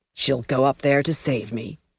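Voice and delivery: perfectly expressionless, flat, emotionless delivery. Reading a captive's reply to his captors, in a perfectly emotionless voice. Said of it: "in a perfectly emotionless voice".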